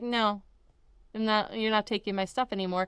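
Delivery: ordinary talk, nothing marked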